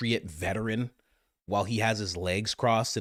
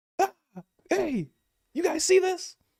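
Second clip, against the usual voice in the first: put-on very high, yelling child voice; 4 dB louder than usual. Acting out a kid yelling at the screen: imitating a kid yelling at the screen. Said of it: "Kid's always yelling at the screen".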